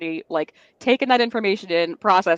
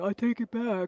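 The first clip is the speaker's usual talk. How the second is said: goofy dim-witted man voice, pitched up; 5 semitones higher, 8 dB quieter than usual. Acting out a joke about King Charles taking back the colonies: dumb guy voice. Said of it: "I gave him dumb guy voice".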